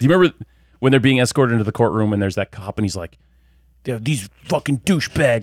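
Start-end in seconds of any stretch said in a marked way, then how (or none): 3.8-5.4 very angry, venting. Retelling a cop's line from a film scene: imitating a super mad cop. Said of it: "he's, like, super mad at the camera".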